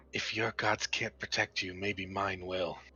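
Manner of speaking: hushed half-whisper, close in. Voicing a character leaning down to an unconscious ally: half-whispering in character. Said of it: "he's gonna whisper and say".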